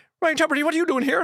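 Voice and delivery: mock heavy Irish accent. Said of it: "this big, lovely Irish accent".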